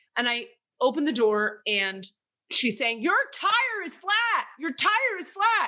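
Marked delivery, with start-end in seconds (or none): 3.0-5.7 put-on shrill high-pitched shout, repeated twice. Retelling a woman shouting at the speaker through the car door: retelling a woman's shouting. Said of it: "let's take it down a notch".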